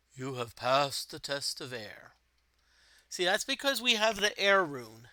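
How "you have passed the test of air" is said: deep voice of a god. Reading game text aloud, a god speaking from above: deep voice of God. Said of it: "The deep voice of God speaks from above".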